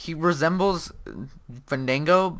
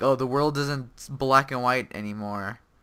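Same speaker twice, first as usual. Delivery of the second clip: usual speaking voice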